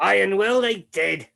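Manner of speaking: resounding, booming, very loud, high-pitched proclaiming voice. Game master voicing a voice that speaks to the group, booming voice. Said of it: "booming voice".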